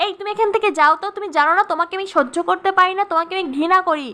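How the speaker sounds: ordinary delivery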